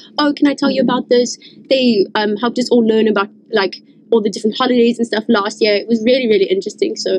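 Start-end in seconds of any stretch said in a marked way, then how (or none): none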